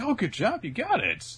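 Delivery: high, loud, cheery voice full of praise.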